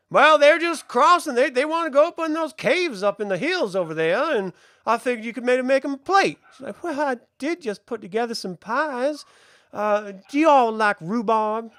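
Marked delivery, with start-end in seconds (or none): 6.8-11.6 friendly, nice farmhouse hostess voice. Narrating to the players, voicing the woman who comes out of the farmhouse; farm woman character voice. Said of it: "You guys get up to the farmhouse, and you see a nice, portly woman come walking out. / and you see a nice, portly woman come walking out. / portly woman come walking out. / I'll have the missus fix a".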